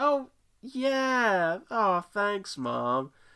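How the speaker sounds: mock forced enthusiasm. Retelling how a son thanks his mom for a game, faking enthusiasm. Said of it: "he's doing his best voice there".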